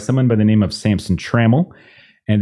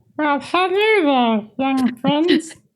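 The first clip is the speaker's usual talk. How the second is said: very high character voice, hello drawn out long. Imagining the players meeting a character with that voice: a little Elmo-y. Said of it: "It's it's a little it's a little Elmo-y".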